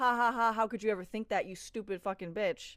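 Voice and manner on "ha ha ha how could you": usual speaking voice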